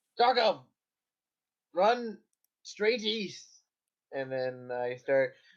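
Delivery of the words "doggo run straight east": high, shouted in-character yell. Playing a character who calls an order to a dog: yelling in character.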